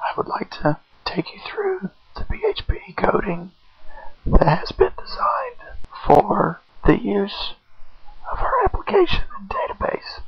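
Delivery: very low whisper, voice gone. Presenter with strep throat walks through the application's code, whispering, voice lost. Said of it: "I have lost my voice, so I have to whisper".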